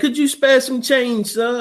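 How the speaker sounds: high-pitched, pleading, put-on British accent. Describing a bit he and friends did, asking for change in a Tiny Tim British accent. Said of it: "doing the British accent".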